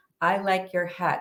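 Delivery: put-on flat delivery, no inflection at all. Recounting words they once said, with no inflection. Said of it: "with no inflection".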